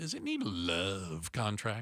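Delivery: creepy way of speaking. Teasing the next topic coming up after the headlines, creepy delivery. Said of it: "Don't say it like that. It's creepy".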